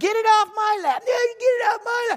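put-on high, bickering, squabbling children's yelling. Retelling grandkids arguing in the back seat: imitating kids yelling. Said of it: "they start yelling at each other".

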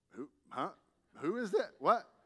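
mock bewildered, startled, confused, caught-off-guard tone. Retelling when she answered with a funny hello, retelling being caught off guard. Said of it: "it just catches you off guard".

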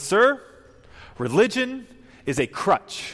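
play-acted, very loud, very high, drawn-out forceful delivery. Speaker retells a student confronting the school chaplain: loud declaration. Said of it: "said in a loud voice".

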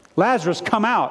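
lightly done put-on loud shout, pitch lifted. Preaching on Lazarus raised from the grave, retelling the call as a loud shout. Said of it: "is what He shouts".

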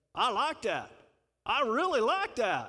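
put-on loud, sing-song Texas accent. Quoting what his dad would say, in his dad's Texas accent. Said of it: "as my dad would say in his texas accent".

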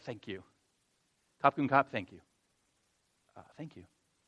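very quiet, deep, hushed under-breath murmur. Retelling thanking a Thai person, then imitating muttering quietly under breath. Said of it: "by saying very quietly under my breath".

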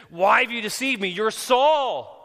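loud, high-pitched scream. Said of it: "she screams".

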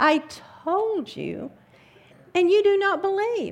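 very high, loud, exasperated, frustrated outburst. Reader voices a speaker answering listeners who do not believe, frustrated. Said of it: "can you hear the frustration in his voice?".

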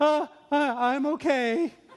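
put-on, very slow, high answer with nervous twinge. Retelling a roadside stranger's answer: imitating a nervous man. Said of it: "he has a real nervous twinge to his voice".

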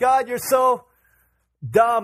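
high, drawn-out, slow, accusing put-on yell. Retelling how Moses yelled at God: imitating someone yelling. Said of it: "Moses is yelling at God".

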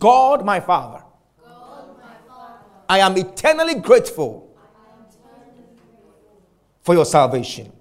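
earnest delivery with firm conviction. Leading listeners in a declaration of thanks to God: said with conviction. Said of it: "say it with some conviction".

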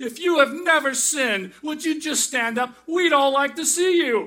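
high-pitched, very loud shouting. Retelling a sermon, the speaker acts out the minister shouting at the crowd. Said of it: "he shouted".

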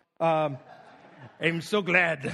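put-on low pirate-sounding accent slipping in. Trying to imitate a Russian woman's greeting, landing on an accidental pirate voice. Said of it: "that's pirate".

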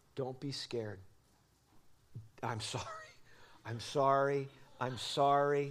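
hushed, soft, low, close whisper. Retelling comforting a frightened daughter on a dark ride: imitating a whisper. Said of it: "And I whispered to her".

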